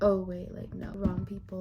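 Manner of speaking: ordinary talk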